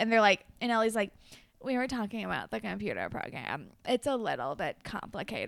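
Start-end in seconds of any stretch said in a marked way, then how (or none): 1.6-5.5 mock patronizing, over-patient, talking-down tone. Retelling what Ellie said to Hazel: imitating Ellie being condescending. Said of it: "she's being really condescending to Hazel".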